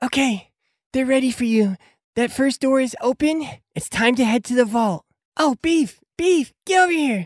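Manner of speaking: very high, squeaky character voice. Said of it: "and goes".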